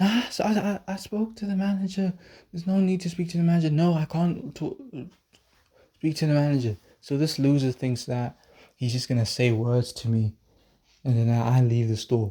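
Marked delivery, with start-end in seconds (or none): 0.0-6.8 high, ballistic, egotistical mock voice. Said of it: "being all ballistic and egotistical".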